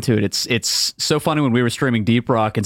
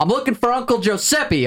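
laid-on, exaggerated Southern accent, very high pitch; 12 semitones higher than usual. Retelling what a customer said on a work call: imitating Marvin Hogg's Southern accent. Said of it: "Super Southern accent".

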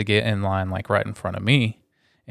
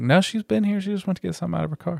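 put-on, high-pitched, defensive shouting; 9 semitones higher, 4 dB quieter than usual. Retelling how the group yelled back at the woman: imitating yelling back. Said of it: "we're all yelling back at her".

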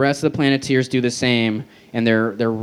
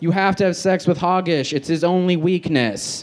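mock light half-yell at a high pitch; 6 semitones higher than usual. Recounting a cartoon parody's plot, the speaker retells the yell from the sky.

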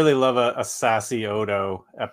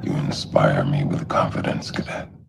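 very deep, heavy, put-on baritone voice; 14 semitones lower than usual. Quoting someone's line about inspiring confidence in a cadet, very deep voice. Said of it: "Very deep voice there".

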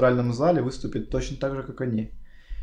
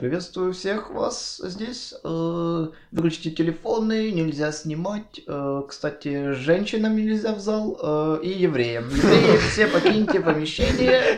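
pitched-up announcer voice heard through a microphone; 6 semitones higher than usual. Retelling what a voice over the microphone said, imitating that voice. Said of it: "Вот такой голос!".

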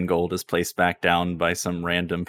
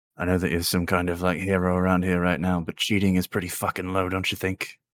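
very quiet, hushed, under the breath; 3 dB quieter than usual. Narrator voicing a sand elf speaking to the player, very quiet. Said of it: "he very quietly says".

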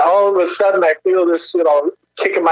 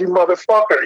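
acted angry yell, loud outburst. Retelling storming out of a bathroom: retelling an angry outburst. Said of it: "I'm all pissed off".

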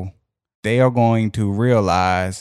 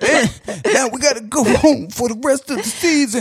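higher-pitched, put-on crying voice. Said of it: "that man was really crying".

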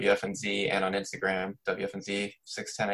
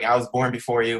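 mock defensive tone, louder; 3 semitones higher, 6 dB louder than usual. Retelling how another user answered a request for his username: imitating a defensive reply. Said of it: "he got really defensive".

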